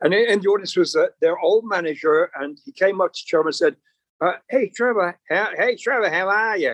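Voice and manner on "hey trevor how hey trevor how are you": higher-pitched, put-on Australian accent. Retelling what an old manager said to Trevor: imitating an Australian accent.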